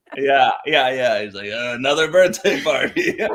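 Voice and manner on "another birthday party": mock-miserable, rough, gruff clown voice, louder. Friends imitating a clown they saw arriving in full attire: put-on rough, gruff clown voice. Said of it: "we have the same clown voice".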